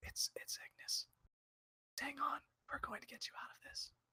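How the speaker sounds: very quiet, hushed, barely audible whisper. Leaning over a barely conscious man, the speaker's character reassures him: whispering very quietly. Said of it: "I'm just gonna whisper as quietly as I possibly can".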